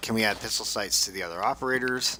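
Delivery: ordinary delivery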